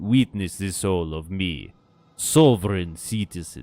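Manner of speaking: put-on vampire accent. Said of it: "lost my old accent and become a vampire".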